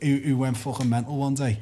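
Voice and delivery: normal talking voice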